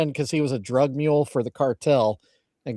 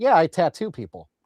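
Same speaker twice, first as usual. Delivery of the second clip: mock offhand, matter-of-fact, casual delivery; 3 semitones higher than usual. Mocking how another speaker tells a wild story: imitating saying it like it's normal. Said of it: "you're saying it like it's so normal".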